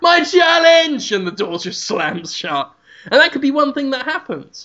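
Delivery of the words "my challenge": acted, very high, desperate shout through tears. Retelling a man burning trash barrels outside a restaurant: imitating a shout. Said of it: "just shouts".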